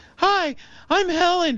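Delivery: very high, ladylike woman's voice. Retelling a phone call, the speaker shows how Helen sounded; imitating Helen's voice. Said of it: "Helen sounded like this".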